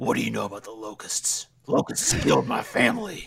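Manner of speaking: low, swooping, dramatic action-soldier voice. Mocking a game's macho hero: Gabe Diaz voice. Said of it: "did you do his voice work?".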